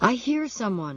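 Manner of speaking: high, trembling, shuddering, sounding hurt and frightened. Halleck speaks up at dawn, shuddering with pain and fear. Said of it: "his voice shuddering with pain, with fear".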